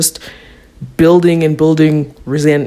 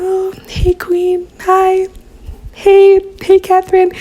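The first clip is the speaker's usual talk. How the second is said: timid, shy, very high-pitched and slow. Acting out Stefan greeting Catherine: demure, timid Stefan voice. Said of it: "more petite about it".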